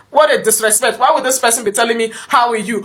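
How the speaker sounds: plain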